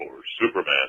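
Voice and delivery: very low, deep hero voice, dropped far down. Imitating the same cartoon hero after he changes, saying his line in a voice about four octaves lower. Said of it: "he'd have his little meek Clark Kent voice".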